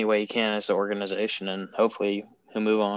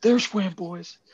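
put-on excited scream, higher; 10 semitones higher, 3 dB louder than usual. Retelling a ballplayer's celebration after scoring: imitating Freddie Freeman screaming.

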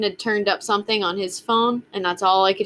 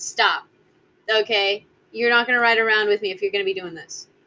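firm, blunt, no-nonsense stern parent tone. Retelling what they say when he pushes their buttons in the car, blunt mom voice. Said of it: "mom voice".

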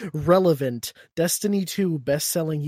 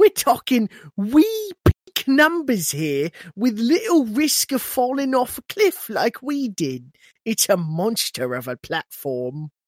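British accent, put on; 8 semitones higher, 4 dB louder than usual. Asked to read a quote aloud in the british accent: put-on british accent. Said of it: "read this in the British accent".

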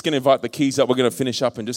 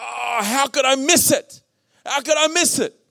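high, slow, anguished crying lament. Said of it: "I'm like".

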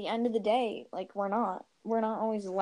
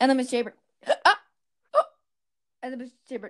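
loud, choppy, glitching stutter like broken audio; 2 semitones higher, 6 dB louder than usual. Showing the other speaker how her story sounded: imitating glitching choppy audio. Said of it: "So that's what it sounded like".

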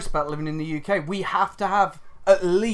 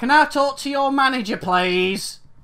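pushy, insistent, pitched-up demanding woman's voice; 6 semitones higher, 4 dB louder than usual. Speaker doing an impression of a woman they just described, impression of her. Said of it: "I'm gonna do an impression of her".

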